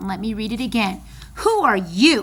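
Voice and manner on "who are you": loud, pretty angry delivery. Reading a story aloud, voicing Turtle: mad Turtle voice. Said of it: "you can tell that Turtle is probably pretty mad".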